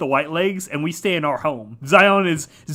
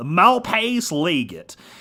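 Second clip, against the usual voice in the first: exaggerated, thick Southern US accent with swooping pitch. Pronouncing the name the Malpais Legate in an exaggerated Southern accent. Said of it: "as like southern as possible".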